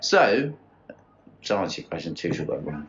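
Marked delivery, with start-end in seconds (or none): 1.4-2.9 very quiet, soft, discreet, kept low-key. Answering a question about the game: said really quietly. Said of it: "I said it really quietly".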